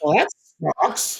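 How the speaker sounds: play-acted, tearful voice, speaking through tears. Retelling sitting in a movie about divorce: imitating own crying. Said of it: "I sat in the movie crying, going like".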